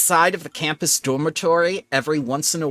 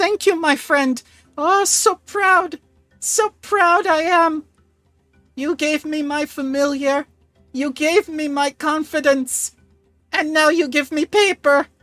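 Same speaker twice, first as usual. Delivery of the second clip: sobbing through tears, very high crying voice; 11 semitones higher, 4 dB louder than usual. Voicing Ancient Root as she thanks you for an invitation: crying while speaking. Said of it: "She's crying and just looks up at you and says".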